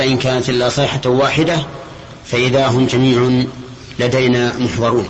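ordinary talk

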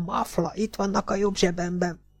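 quiet, sharp, scolding snap. Reading an old man's line to someone tying up a captive, snapped quietly. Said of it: "rivalt rá halkan az öreg".

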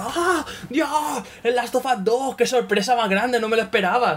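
mock, high, overexcited online reaction voice.

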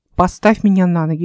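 ordinary delivery, nothing marked

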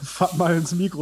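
slow speech broken up by laughter. Talking to chat between sips of beer, laughing while talking. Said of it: "ich muss gerade lachen".

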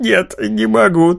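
bursting into laughter after holding it in. A character told to stop laughing finally gives in, bursting out laughing. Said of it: "так долго сдерживалась".

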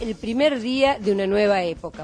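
plain

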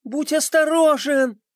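very high, loud shout. Pinkie calls after Orash as he falls; shouted after him. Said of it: "крикнула ему вдогонку Пинки".

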